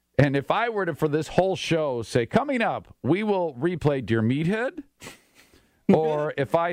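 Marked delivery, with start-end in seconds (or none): 3.0-4.8 question-like upward rise at end of "Meathead". Showing how upward inflection on every sentence sounds strange: upward inflection at sentence end. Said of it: "every sentence ends with an upward inflection, and it makes them sound strange".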